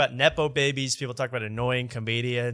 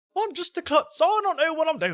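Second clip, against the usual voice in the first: very high, mincing voice. Imitating Jack Whitehall mincing around the stage: mocking Jack Whitehall's mincing voice. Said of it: "he minces around the stage being like".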